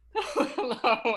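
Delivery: loud voice breaking into giggles. Greeting the co-host at the start of the podcast, giggling while talking. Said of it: "I'm still giggling".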